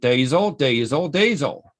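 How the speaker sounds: put-on Australian accent. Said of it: "I'm gonna try to do an Australian accent".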